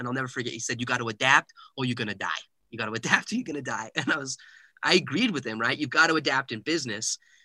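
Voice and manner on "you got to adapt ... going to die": put-on strong, thick, heavy New York accent. Retelling what a business owner said in a conversation, thick new york accent. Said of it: "he had this thick New York accent".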